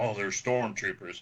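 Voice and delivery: ordinary talk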